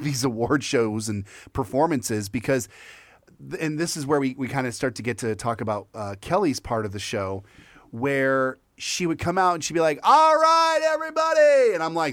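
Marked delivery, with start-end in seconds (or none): 10.0-11.7 very high, shrill, loud yell. Imitate Kelly coming out for her part of the show, a Kelly yelling impression. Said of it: "why are you yelling".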